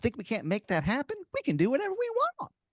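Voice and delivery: pitched way up with a big swoop. Telling a made-up story, voicing a grinning talking tooth: Timmy the Tooth voice. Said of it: "He's like".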